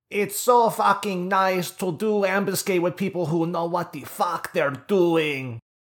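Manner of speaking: unpracticed fake Dutch accent, very high and loud. Speaker trying an accent never practiced before, bad dutch accent. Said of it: "try and do a Dutch accent".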